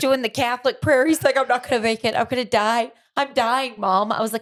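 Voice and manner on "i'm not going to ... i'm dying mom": mock frantic, terrified, panicked blurt of dread. Retelling a son's reaction to a hole in his nose: imitating panicked freaking out. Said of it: "then he started freaking out even more".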